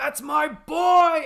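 very high, very loud, drawn-out anguished scream. Retelling the scene where Cedric's dad bursts through the crowd, imitating a screaming, crying father. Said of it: "he just starts like screaming and crying".

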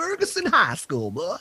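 Virginia-accented voice, pitched very high. Naming his old high school, in a virginia accent. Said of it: "Is that your Virginia accent?".

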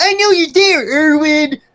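shrill, loud, very high-pitched cartoon voice. Recalling a cartoon scene where Billy calls Irwin, imitating Billy. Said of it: "and Billy's like".

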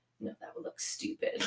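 very hushed whispered aside under the breath. Retelling what one of the kids said under her breath: imitating a whisper. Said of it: "Charlie whispers under her breath".

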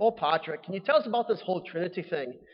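bad fake leprechaun-style Irish brogue. Telling a joke where two leprechauns question St. Patrick: terrible Irish accent. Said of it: "Excuse me for my terrible Irish accent".

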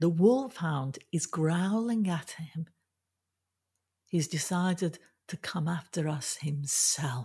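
ordinary delivery

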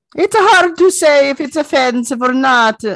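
very high-pitched, loud put-on Italian accent. Leading into the Mario Brothers movie cast story, Italian accent. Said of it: "wasn't going to lead into that story with that accent".

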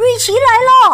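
very high, fast, eager excited shout, like a small rabbit. A little rabbit, seeing Ricky approach, calls out: excited shout. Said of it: "一只小兔子兴奋的喊道".

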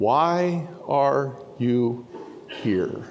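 gentle voice, very drawn out and slow. Preaching, the speaker retells God asking the question again, in a gentle voice. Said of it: "in that gentle voice".

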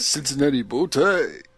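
put-on voice sounding like an old man.

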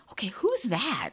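put-on whisper. Recalling watching Marvel movies with him, the speaker acts out a past moment; retelling a whisper. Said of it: "I'm whispering".

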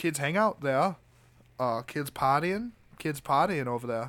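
put-on New England Maine accent, done well. Retelling what an investigator said: imitating an investigator's Maine accent. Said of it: "really good, uh, Maine accent of one of the investigators".

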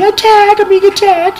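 put-on crying and screaming. Retelling tackling a woman, acting out her words, imitating her crying and screaming. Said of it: "she's all crying and screaming".

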